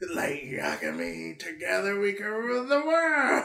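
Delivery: little rasping monster voice. Describing a stitched-together monster saying your name: imitating a little raspy voice. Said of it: "says your name in his little raspy voice".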